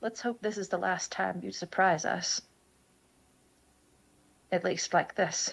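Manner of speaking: hushed, quiet, softly spoken, low-key. Player in a tabletop game speaking in character to a taller companion, quiet voice. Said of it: "I'm going to say quietly".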